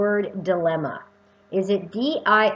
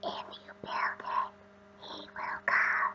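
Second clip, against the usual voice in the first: very slow, drawn-out, freaky, eerie whisper. Imitating the voice heard in the Field of Dreams cornfield: freaky Field of Dreams voice. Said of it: "And it's quite freaky, the voice".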